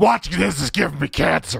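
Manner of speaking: loud, rough voice. Reading a viewer's comment aloud in Filthy Frank's voice. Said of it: "I read that in Filthy Frank's voice".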